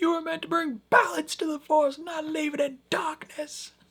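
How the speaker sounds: put-on very high, dramatic shouted voice. Recapping a show episode, quoting one character yelling at another, retelling a yell. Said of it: "Menusos is yelling at her like".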